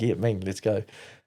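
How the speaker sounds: normal talking voice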